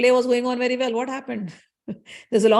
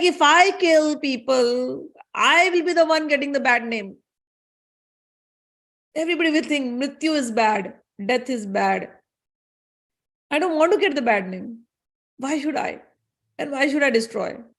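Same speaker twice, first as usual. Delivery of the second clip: put-on sobbing, tearful crying through the words; 3 semitones higher than usual. Retelling a story, speaking as Death while he weeps: put-on crying. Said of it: "he starts crying. He's like".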